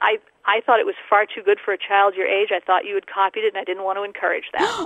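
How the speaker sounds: ordinary talk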